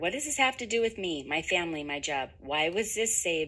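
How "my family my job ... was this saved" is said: ordinary talk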